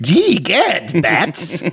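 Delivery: theatrical comic-book villain voice, high, swooping, wide-ranging sing-song. Imitating the Joker from Arkham Knight after talking about him: Joker voice. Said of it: "That's not bad".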